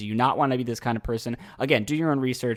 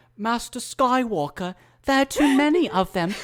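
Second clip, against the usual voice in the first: mock young child voice; 12 semitones higher, 4 dB louder than usual. Doing an impression of the Padawan from Revenge of the Sith. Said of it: "I'm gonna do my best impression here".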